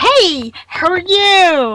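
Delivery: put-on very slow, loud holler, "you" stretched long. Imitating Star's greeting that she screams at fairs: imitating Star's loud greeting. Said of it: "She'll scream it".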